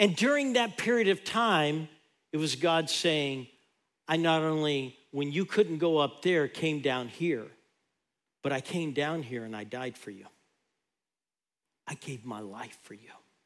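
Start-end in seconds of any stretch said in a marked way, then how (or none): 4.1-13.1 acted whisper, lower. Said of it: "God's just whispering to her".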